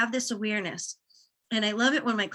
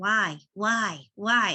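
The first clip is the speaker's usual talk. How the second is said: put-on childlike, repetitive little kid voice. Advising someone to keep questioning like a little kid: little kid voice. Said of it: "Be that little kid that's like".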